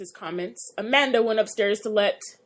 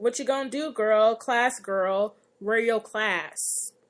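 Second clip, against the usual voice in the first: exaggerated, over-the-top, mocking put-on voice. Reading a quoted line from a news article: imitating an over-the-top stereotypical voice.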